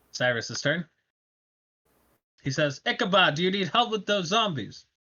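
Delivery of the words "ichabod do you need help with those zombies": high, screamed in put-on voice. Voicing a character who calls to Ichabod about the zombies: shouting in character. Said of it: "Why are we screaming?".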